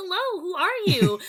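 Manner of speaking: high cartoon fairy-tale princess voice. Explaining why little kids like the speaker, doing a high Disney princess voice. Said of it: "I uh can definitely do like the hi Disney princess voice".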